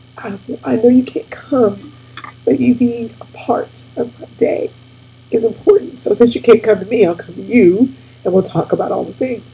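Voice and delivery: ordinary talk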